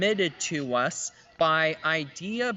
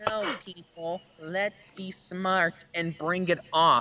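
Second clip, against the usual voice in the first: plain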